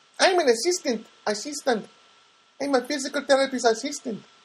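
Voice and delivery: very high, bad put-on Filipino accent. Retelling what a woman told the speaker, in a terrible Filipino accent. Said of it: "Trying to do the Filipino accent".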